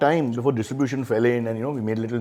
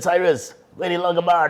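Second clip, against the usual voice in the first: put-on New York Italian accent, pitched a bit higher; 7 semitones higher, 3 dB louder than usual. Retelling how a man greeted the speaker: imitating an Italian New Yorker accent. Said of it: "he sounded like an Italian from New York".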